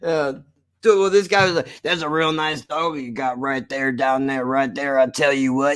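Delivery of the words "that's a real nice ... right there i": strained, mumbly put-on voice, words forced out. Retelling what a guy said: strained mumbly imitation of a guy. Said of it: "Gonna kill my voice to do it every single time ... mine is straining, but that's literally how he sounded".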